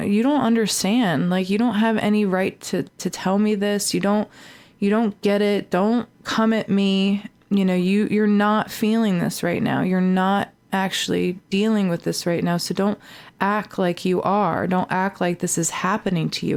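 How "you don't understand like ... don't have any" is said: usual speaking voice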